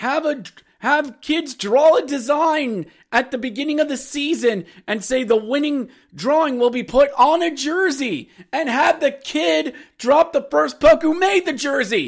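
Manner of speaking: heated, high-pitched yelling rant. Speaker criticizing Hershey's jersey idea and offering a better one, yelling. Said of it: "I'm yelling".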